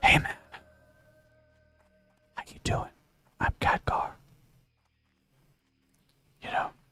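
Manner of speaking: soft, hushed, close whisper, barely audible. Imagining Khadgar greeting someone, Khadgar whispering. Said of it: "Can you imagine Khadgar whispering like".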